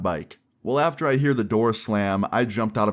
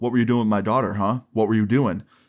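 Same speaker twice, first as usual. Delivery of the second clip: put-on angry, furious voice. Retelling a confrontation with a girlfriend's angry dad: imitating an angry dad. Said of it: "he starts getting up in my face".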